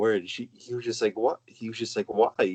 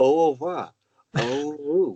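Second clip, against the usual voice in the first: put-on mimicked French accent, higher; 4 semitones higher, 4 dB louder than usual. Retelling how an exchange student talked: imitating French exchange student accent. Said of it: "And with that French accent".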